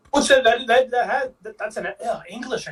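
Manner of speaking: stuttering over repeated words. Replying in a conversation about a show, stuttering. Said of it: "I'm stuttering so much".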